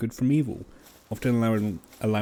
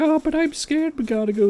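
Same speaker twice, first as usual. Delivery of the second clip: put-on scared kid voice, much higher; 6 dB louder than usual. Retelling a scene, the little boy answers the man urging him, imitating scared little Billy. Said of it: "this scared looking little boy".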